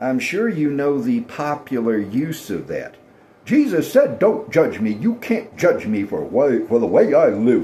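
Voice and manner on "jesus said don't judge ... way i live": put-on very judgmental, disapproving delivery. Imitating people who quote Jesus back at preachers: imitating a judgmental tone. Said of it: "they always say it in a very judgmental tone".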